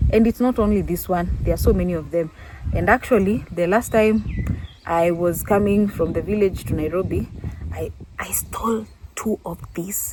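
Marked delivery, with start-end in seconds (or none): 7.7-10.1 soft, hushed, confiding whisper. Speaker keeps their grandmother from hearing: whispering. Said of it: "I'm whispering so that my grandmother does not hear".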